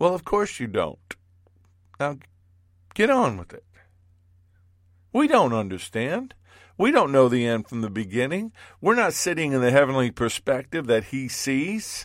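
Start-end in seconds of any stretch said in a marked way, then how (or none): 0.0-3.5 dry, sarcastic, swooping delivery. Voicing the Lord's imagined answer to a complaint: sarcastic reply. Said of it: "if he had my sarcasm".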